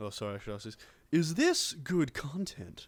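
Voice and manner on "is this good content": very slow, drawn-out, swooping, raised, swinging pitch. Asking the others a question as a Bateman impression. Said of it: "was that a good Bateman impression".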